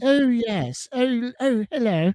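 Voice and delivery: put-on prim, queenly elderly lady, high, posh regal voice. Telling listeners mum is coming tomorrow, imitating mum's voice. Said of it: "That's how she talks".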